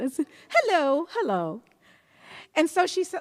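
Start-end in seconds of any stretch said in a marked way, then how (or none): 0.5-1.6 high, put-on English accent. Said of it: "like I had an English accent".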